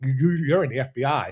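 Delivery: mock grave, serious, paranoid, suspicious tone. Retelling what a man said when his face turned serious; imitating his serious tone. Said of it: "his face got all serious and was like".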